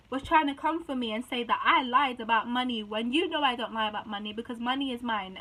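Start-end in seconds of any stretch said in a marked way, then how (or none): none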